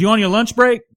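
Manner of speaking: very high, loud lady voice. Retelling how the restaurant owner came out and questioned the speaker, imitating the restaurant owner. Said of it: "when I when I imitate her here".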